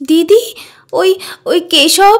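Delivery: sobbing while talking. Telling her sister what happened, crying while talking. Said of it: "তুই এভাবে কাঁদছিস কেন?".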